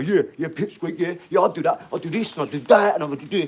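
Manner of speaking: cocky, brash, dismissive tough-guy bluster. Mocking a tough guy who boasts what he would do: imitating a tough guy. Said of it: "some tough guy coming in and go".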